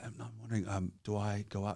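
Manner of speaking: hushed soft voice.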